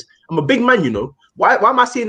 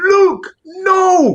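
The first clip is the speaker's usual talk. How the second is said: shrill, very high, desperate pleading scream; 12 semitones higher than usual. Retelling what David De Gea screamed at a defender: imitating David De Gea screaming. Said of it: "David De Gea was screaming".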